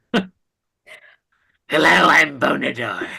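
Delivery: rough, creaky, raspy creepy creature voice. Trying out a voice for the character Bonador: Bonador voice, halfway to Gollum. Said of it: "It's kind of halfway to Gollum".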